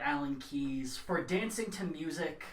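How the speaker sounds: ordinary talk, nothing marked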